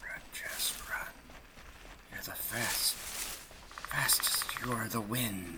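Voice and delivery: high, urgent whispering.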